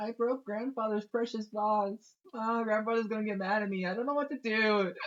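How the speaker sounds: very high, tearful, sobbing crying. Voicing a character who broke grandfather's vase, asked why crying: acted crying. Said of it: "Why are you crying so".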